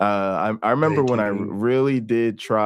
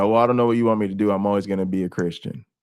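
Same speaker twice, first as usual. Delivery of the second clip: put-on defiant, retorting woman's tone. Retelling mom's answer in the same talk: imitating mom sounding defiant. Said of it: "or defiantly when she said".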